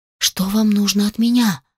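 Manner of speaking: ordinary delivery, nothing marked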